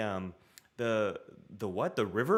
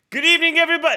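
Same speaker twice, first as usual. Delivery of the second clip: shrill and loud, done badly on purpose; 15 dB louder than usual. Trying out a John Oliver impression for the other speaker: horrible John Oliver impression. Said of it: "I could probably do a horrible John Oliver".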